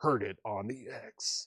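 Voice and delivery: hard rock radio DJ announcing voice. An auction host reading a lot title aloud in a hard rock dj voice. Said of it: "I'd need to do like a hard rock um, D J voice".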